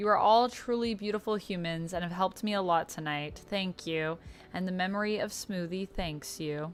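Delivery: plain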